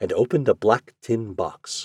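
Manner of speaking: plain reading voice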